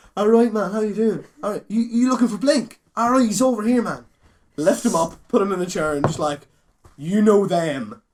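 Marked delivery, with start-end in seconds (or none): 0.2-4.1 put-on Carlow accent. Retelling meeting a terrified young chap, put-on Carlow accent. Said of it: "I pull my best Corlo accent out".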